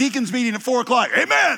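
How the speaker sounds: high-pitched, loud shouting. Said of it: "the guy who says stuff when it doesn't apply".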